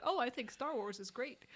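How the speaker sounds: ordinary talk, nothing marked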